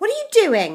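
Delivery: piercing, very high-pitched, shrill grandma voice. Narrator reading Grandma calling to George from the next room, shrill voice. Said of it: "came the shrill voice".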